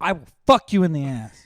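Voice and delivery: full-volume, very loud, high-pitched scream. Yelling at a dog mid-sentence while recording: yelling at a dog. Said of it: "You just yelled at your dog".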